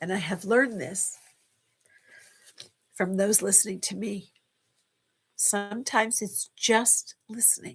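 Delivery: verklempt, emotional. Speaking about learning from those who listen, choked up. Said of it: "I'm a little verklempt at the moment".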